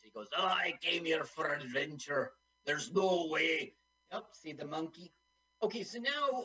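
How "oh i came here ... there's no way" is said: put-on Scottish accent. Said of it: "He's Scottish".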